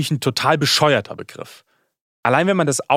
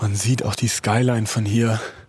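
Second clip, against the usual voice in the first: winded, panting, out of breath; 4 semitones lower than usual. Touring a hilltop neighbourhood just after a steep climb; out of breath, panting. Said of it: "Sorry, dass ich hier so keuche".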